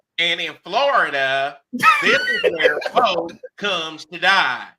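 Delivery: very slow, drawn-out, loud, swooping speechifying. Showing the other speaker a Ron DeSantis impression. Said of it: "I always have my Ron DeSantis where he goes".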